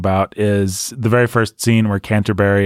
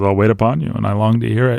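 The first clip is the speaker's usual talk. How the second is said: knowing, dripping, completely sarcastic tone. Imitating an actor's delivery of a Shakespeare line: imitating a sarcastic line delivery. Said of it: "completely sarcastic".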